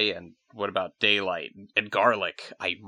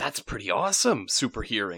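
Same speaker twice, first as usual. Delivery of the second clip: usual speaking voice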